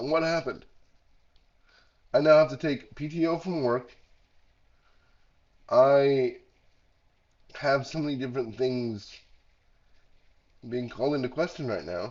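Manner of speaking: heavily congested, stuffed-up sick voice.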